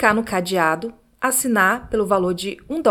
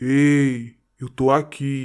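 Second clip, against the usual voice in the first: very deep, thick voice with drawn-out ei; 7 semitones lower than usual. Retelling a scary story, voicing the voice she heard: deep voice. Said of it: "ouviu uma voz grossa dizendo".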